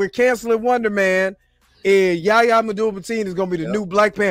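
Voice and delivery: ordinary talk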